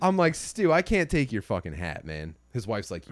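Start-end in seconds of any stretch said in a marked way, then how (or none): none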